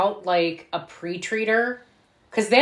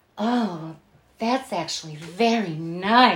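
put-on breathy voice. Retelling a woman's words after she sucked on her thumb: imitating a breathy voice. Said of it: "It is very breathy and ooh".

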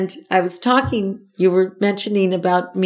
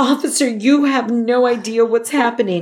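put-on tearful crying voice, higher; 4 semitones higher than usual. Retelling a plea to a police officer after being stopped: retelling a tearful plea. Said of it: "And I'm crying".

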